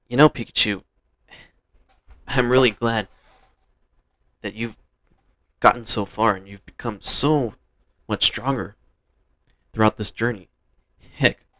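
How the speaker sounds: ordinary delivery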